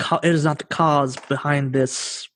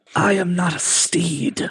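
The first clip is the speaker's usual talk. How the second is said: hissed-out snake-like voice; 3 semitones higher than usual. In a role-play, the narrator voices Gormungandr on a player's shoulder, hissing. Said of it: "he hisses from your shoulder".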